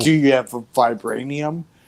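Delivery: plain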